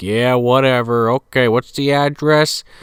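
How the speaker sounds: dismissive, offhand, can't-be-bothered cop voice. Retelling how the cop answers the caller: imitating a dismissive cop. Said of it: "poo-pooing her".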